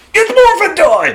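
very high cry screamed into the mic. Retelling how kids sound on a podcast intro: imitating kids screaming. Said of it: "screaming into the mic".

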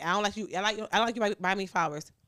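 plain

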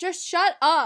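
high, loud, fed-up annoyed yell. Retelling telling a sibling to shut up: imitating someone yelling. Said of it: "Stop yelling".

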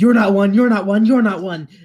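high, frantic, rattled-off panicked screech. Voicing a figure freaking out at the party: screaming in panic. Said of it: "he begins to scream".

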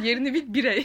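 loud, laughing, mock scolding tone.

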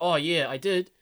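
put-on Australian accent. Retelling an anime character's reply to a groupie's question: australian accent. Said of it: "that's Australian. I can't do it in a British accent".

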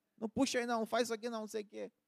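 mock dad scolding nonstop, high-pitched. Retelling working with a father who scolded throughout: imitating father scolding. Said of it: "meu pai era bronca do início ao fim".

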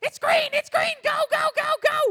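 tiny, squeaky little voice, very high and loud. Recounting being startled while driving, repeating what was heard in a squeaky little voice. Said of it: "I hear a squeaky little voice".

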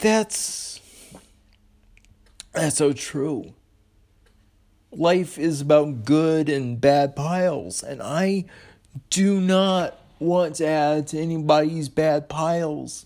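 emotional, choked, high and slow. Responding to a scene just heard, getting emotional. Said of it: "I apologize for getting emotional".

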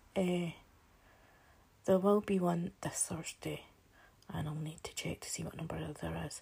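speaking quietly. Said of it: "I'm being quiet because".

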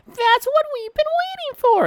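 mock cartoon character voice, very high and loud.

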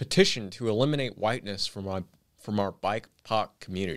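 usual speaking voice

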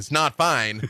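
voice-over storybook narrator voice. Describing favorite characters, adding a comment in a narrator voice. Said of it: "Narrator voice".

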